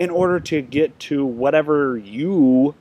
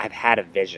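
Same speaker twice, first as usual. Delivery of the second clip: low executive voice, announcing; 8 semitones lower, 3 dB quieter than usual. Retelling a CEO's announcement to his gathered employees, in a put-on CEO voice. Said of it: "Now that's my CEO voice".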